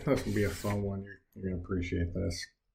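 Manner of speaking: flat, dry sarcastic aside. Introducing the next lesson problem to students: sarcastic. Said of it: "I say with sarcasm".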